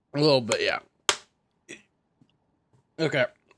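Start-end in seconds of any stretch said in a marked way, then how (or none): 0.2-0.8 choking voice, throat blocked, mouth full. Answering another player who asks about choking: choking on food. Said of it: "are you choking?".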